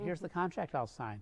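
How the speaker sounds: ordinary delivery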